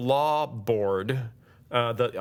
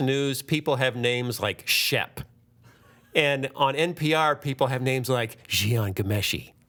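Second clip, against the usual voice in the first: plain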